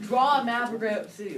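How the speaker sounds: loud, high-pitched yelling.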